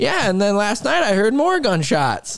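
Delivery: put-on very high, swooping little old woman's voice. Retelling what the neighbor lady told their boss, imitating an old lady. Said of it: "She sounds country?".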